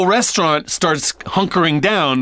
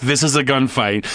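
usual speaking voice

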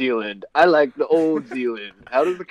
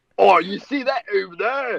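terrible put-on Australian accent, pitched up; 6 semitones higher than usual. Pointing out a manga man to Josuke, in a terrible Australian accent. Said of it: "our terrible Australian accents".

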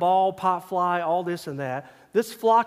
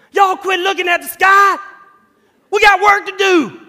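shrill, booming, loud, high holler; 13 semitones higher, 12 dB louder than usual. Retelling how the coach called out as everyone watched geese, imitating Coach Pettis's loud voice. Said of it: "Then I hear this loud voice".

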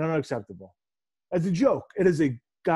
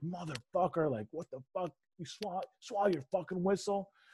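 mock cursing muttered under the breath, very quiet, hushed; 4 semitones higher, 12 dB quieter than usual. Recalling a moment when they lost it, the speaker re-enacts their own cursing. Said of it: "and I was cursing".

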